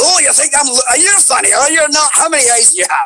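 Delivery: put-on very high, drunk-sounding Scottish accent voice. Recalling ad-libs while recording a game character: drunk Scottish octopus voice. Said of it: "I got to do a drunk Scottish octopus".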